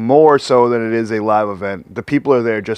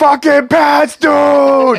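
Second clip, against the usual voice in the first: very high, loud top-of-lungs scream, dude drawn out; 5 dB louder than usual. Retelling a cheer in the smoking section: imitating own scream. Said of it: "screaming at the top of my lungs".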